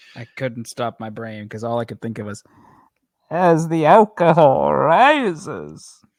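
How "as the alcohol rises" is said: very loud, very slow booming voice. Repeating a line from the reading in a Bane voice. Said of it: "I'm just doing a Bane voice".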